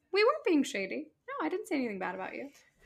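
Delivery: high, swooping sing-song. Retelling how Tamra lied to Shannon in the bathroom: imitating Tamra lying. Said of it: "straight up lying to Shannon".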